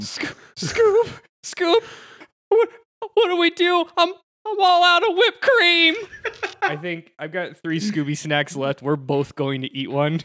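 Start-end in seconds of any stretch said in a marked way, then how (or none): 0.0-5.9 high, panicked yelping voice. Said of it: "Did I do my thing?".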